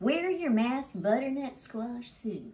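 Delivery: light Southern American accent. Cook presenting a recipe says the dish's name in a southern accent. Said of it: "you notice how I do that kind of with the southern accent?".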